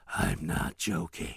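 soft, close, quiet, hushed whisper. Imitating Biden leaning into the camera: whispering Biden impression. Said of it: "where he whispers".

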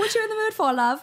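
clumsy put-on British accent, very high. Retelling what her partner asked in the shower: bad British accent. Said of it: "I can't do his accent at all".

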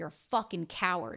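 ordinary talk, nothing marked

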